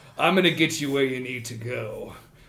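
threatening beast character voice. Voicing a menacing minotaur driver greeting players in his car: Yakyazar the minotaur. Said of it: "he turns to you and he says".

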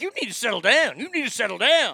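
put-on angry scolding. Retelling what Roz said in line after she got mad: imitating angry Roz. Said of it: "Roz gets all mad".

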